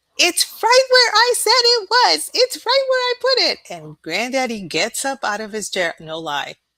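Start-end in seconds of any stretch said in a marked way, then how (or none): 0.2-3.6 very high, very loud, shrill screaming. Retelling how grandma yelled from the bathroom: imitating grandma screaming. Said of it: "I hear her screaming".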